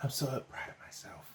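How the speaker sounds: put-on whisper. Retelling how a contestant spoke at the show's finale, whispering like Anissa. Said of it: "why was Anissa whispering?".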